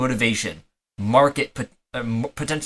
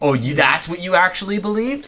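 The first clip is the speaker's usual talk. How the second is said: high, snarky, sarcastic, mock disbelief; 6 semitones higher than usual. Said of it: "sarcastic, like, snarking that".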